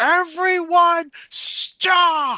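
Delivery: very high, loud, commanding shout. Trying to tap into magic without an exact spell, yelling. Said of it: "Just yell".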